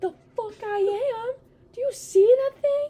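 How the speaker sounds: put-on high, loud, terrified little girl yell.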